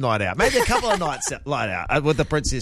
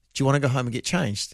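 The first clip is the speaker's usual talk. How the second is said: softly spoken, quiet, hushed, low-key. Speaker retells what they asked the listener back then, said quietly. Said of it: "I went quietly".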